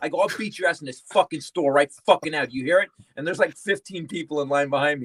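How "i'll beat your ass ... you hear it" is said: mock-angry, snapping in anger. Retelling a confrontation in a pharmacy line with a yelling man, retelling an angry threat. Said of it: "I snapped".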